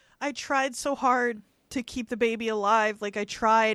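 usual speaking voice

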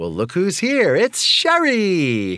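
put-on, very high, swooping, gushing, one word stretched out. Quoting a father's words on seeing sherry arrive: imitating dad's enthusiastic greeting. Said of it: "his enthusiasm was just".

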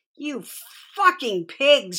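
high, shrill shout. A narrator reads a mother turning on approaching police officers: shouted. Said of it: "she shouted".

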